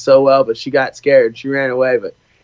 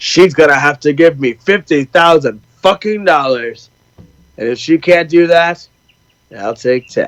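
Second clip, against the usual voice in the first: put-on swaggering old Hollywood movie-cowboy voice. Quoting a comedy bit aloud, sounding John Wayne-ish. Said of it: "Sounds like very John Wayne-ish".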